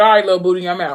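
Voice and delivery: plain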